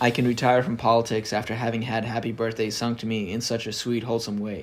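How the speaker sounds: plain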